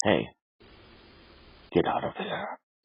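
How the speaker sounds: creepy spooky scary voice. Talking about yard cameras, addressing a deer in a creepy deer-scaring voice. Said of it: "my best uh, creepy deer scaring voice".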